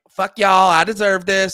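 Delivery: put-on loud, bratty, snotty, entitled tone. Retelling a woman's voiceover from a grocery video: imitating a bitchy attitude. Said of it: "she's just being, like, a bitch about it".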